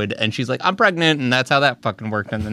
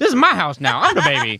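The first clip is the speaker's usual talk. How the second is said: put-on old cartoon gangster voice; 3 semitones higher than usual. Describing a girl's nightmare about her new baby brother talking, Looney Tunes gangster voice. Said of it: "that's how he fucking talked".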